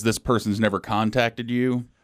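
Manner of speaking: plain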